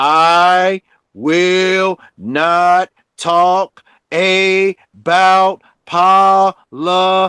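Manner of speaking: slow, deliberate, drawn-out word-by-word delivery. Stating it slowly so people will understand, said slowly. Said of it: "I'm going to say it slowly".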